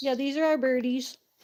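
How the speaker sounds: talking while chewing, mouth full. Greeting a viewer and showing off the pet birdies, talking while chewing. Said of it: "Sorry, I was chewing".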